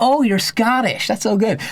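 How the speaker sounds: put-on high slow American accent.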